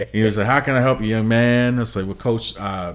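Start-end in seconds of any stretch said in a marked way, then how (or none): 0.5-1.8 put-on southern drawl, higher and louder. Retelling meeting the coach, imitating Coach Rob in a big southern drawl. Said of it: "big southern draw".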